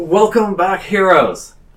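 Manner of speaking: very high, very loud calling-out shout. Voicing a king who welcomes back the heroes: king calling out a welcome. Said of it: "King calls out".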